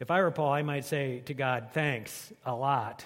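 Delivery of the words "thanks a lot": sarcastic, insincere voice. Imagining thanking God if he were Paul, in a sarcastic tone. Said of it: "with a sarcastic tone".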